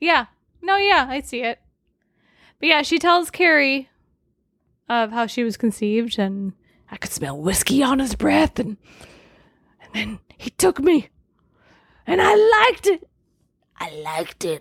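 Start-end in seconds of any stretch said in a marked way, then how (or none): 6.2-14.6 swooping, sing-song put-on voice. Quoting what she tells Carrie about how she was conceived: put-on character voice. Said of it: "don't do the voice".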